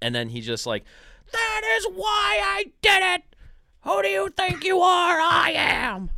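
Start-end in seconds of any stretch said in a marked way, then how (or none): 1.3-6.1 mock very high, slow, drawn-out shout. Retelling how an athlete yelled at himself after a strike: imitating someone yelling at himself. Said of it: "he's yelling at himself".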